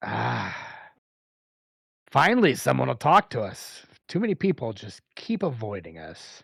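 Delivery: raspy, rasping voice of a short dwarf woman. Narrating a game scene, the speaker voices a shorter dwarf answering a player: raspy dwarf voice. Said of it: "has a a a raspy, uh, voice".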